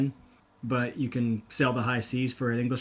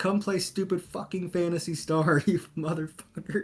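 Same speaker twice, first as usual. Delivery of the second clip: mock kid voice, high, furious cussing rant; 5 semitones higher than usual. Retelling a childhood phone message to a friend: imitating a kid cussing someone out. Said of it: "cussing this guy out".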